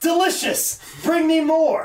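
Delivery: mock slow, high-pitched, drawn-out yell. Retelling what a character yells after a pile driver: imitating someone yelling. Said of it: "he yells".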